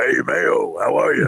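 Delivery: tremendous, loud, slow radio announcer voice. Retelling how Greg Fadick greeted people: Greg Fadick's announcer voice. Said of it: "he sounded just like that if he was talking to you".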